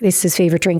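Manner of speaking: ordinary talk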